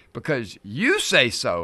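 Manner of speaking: very sarcastic, slow, leaning on "you". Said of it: "in a very sarcastic way".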